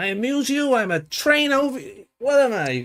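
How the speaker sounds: very high-pitched, very slow, drawn-out character voice. Quoting a film line as Joe Pesci: Joe Pesci voice. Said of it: "look at Joe Pesci doing his voice".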